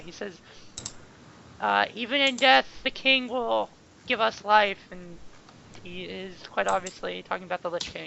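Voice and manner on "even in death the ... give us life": loud, gleeful villain cackle through the words. Running a game, the speaker voices a character's line while cackling. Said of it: "he cackles and says".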